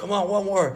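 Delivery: high, loud, egging-on scream. Retelling being at a rail trick, imitating someone screaming. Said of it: "screaming, like".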